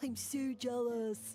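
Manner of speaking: beach bro surfer dude voice. Voicing a fungus character talking to another fungus: surfer dude voice. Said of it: "sound like a surfer dude".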